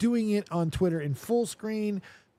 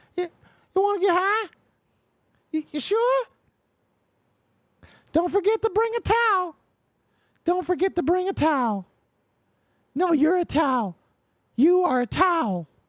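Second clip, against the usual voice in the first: very high, loud cartoon voice; 13 semitones higher, 5 dB louder than usual. Asked to do a South Park voice: Towelie voice from South Park. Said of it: "do a Tally voice from South Park".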